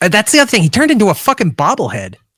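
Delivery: ordinary delivery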